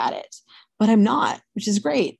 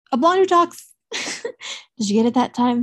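normal talking voice

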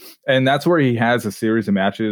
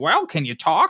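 small, high, shrill voice, done badly; 6 semitones higher than usual. Retelling a phone call to an injured wrestler: Paul Heyman impression. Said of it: "terrible Paul Heyman impression".

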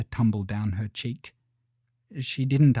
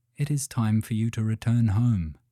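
ordinary delivery

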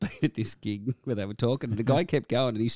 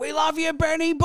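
mock very high-pitched shout; 4 dB louder than usual. Retelling a bogan yelling out in the quiet break at a concert, retelling a fan's yell. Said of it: "yelled out".

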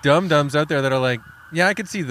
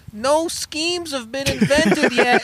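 put-on street newspaper seller's call, higher; 12 semitones higher than usual. Acting out young newspaper boys on the corner: imitating a newsboy hawking papers. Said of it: "on the corner every day going".

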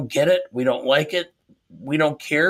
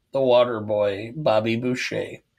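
usual speaking voice

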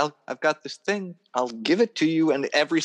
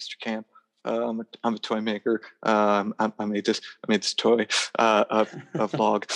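put-on nervous fan voice, much slower; 4 semitones lower than usual. Retelling approaching someone at Comic-Con with a toy, acting out a nervous fanboy. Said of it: "did the nervous fanboy".

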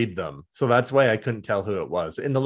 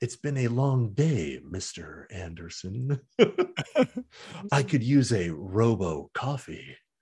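hushed, low-key delivery; 5 dB quieter than usual. Joking about a robot's coffee order, the speaker slips into an Agent Smith voice. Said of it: "hint of Agent Smith".

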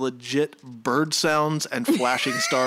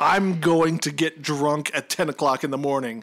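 mocking put-on voice. Mocking the show's writer: imitating the Kids Incorporated writer. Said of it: "That's my impression of the Kids Incorporated writer".

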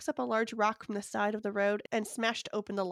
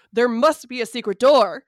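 very loud, booming, huge put-on character voice; 2 semitones higher, 15 dB louder than usual. Narrator voicing Ted crying out while searching, in a Bigfoot voice. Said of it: "I already lost my Bigfoot voice".

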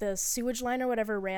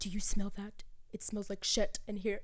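thick put-on Scottish accent; 5 dB quieter than usual. Retelling a guy complaining about a smell, thick Scottish accent. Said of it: "he had like a really thick Scottish accent".

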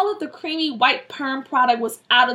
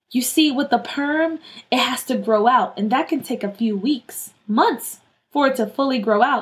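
ordinary delivery

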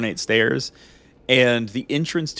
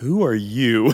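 mock slow, drawn-out, angry, pissed-off voice. Retelling how a woman answers Titus, imitating a slow, pissed-off question. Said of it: "just slowly is like".

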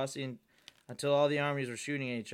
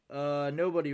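plain reading voice

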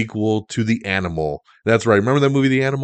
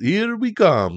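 put-on very high pitch with light touch of Italian accent; 9 semitones higher than usual. Showing how he speaks in the movie if you listen closely, Mario voice, slight Italian accent. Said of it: "He's got a little slight Italian accent".

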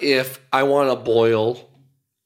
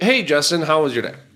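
ordinary delivery

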